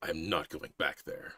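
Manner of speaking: muttered growl under the breath. Narrator reading a character's barely audible reply, growling under his breath. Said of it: "he just growls, like under his breath".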